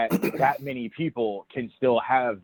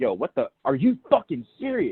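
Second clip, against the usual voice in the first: mock furious outburst with swooping, rising pitch. Retelling how the girls reacted to the stranger: imitating angry outburst. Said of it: "they went off".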